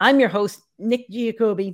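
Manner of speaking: voice cracking and breaking. Podcast host introducing himself at the start of the show; voice cracking. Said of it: "My voice is cracking already".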